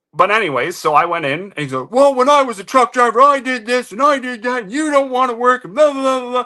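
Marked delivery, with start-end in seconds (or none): 1.9-6.5 play-acted, very high, shrill, ranting yell. Retelling what the boss yelled at work: imitating boss yelling. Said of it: "he's yelling at me".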